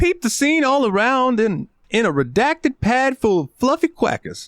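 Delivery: goofy, very high put-on voice. Reading out text from a Jive translator: silly put-on voice. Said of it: "even though I'm doing a silly voice".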